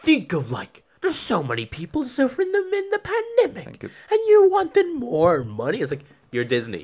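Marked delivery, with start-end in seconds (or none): 0.0-5.8 very high, loud, shrill, swooping sing-song voice. Imitating Disney replying to the lawsuit: imitating Disney. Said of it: "Disney was like".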